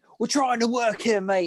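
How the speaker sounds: high, mock Australian accent.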